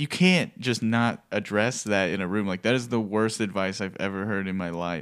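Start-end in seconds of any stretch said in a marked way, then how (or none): none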